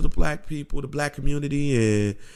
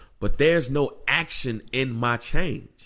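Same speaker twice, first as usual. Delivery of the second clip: plain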